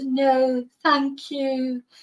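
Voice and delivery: pathetic little whine, mumbled and hard to make out. Retelling a handcuffed man's reply: imitating Stefan's whiny voice. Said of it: "That whiny voice of his".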